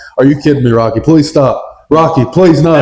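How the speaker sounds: normal talking voice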